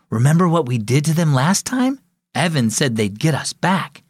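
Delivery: plain reading voice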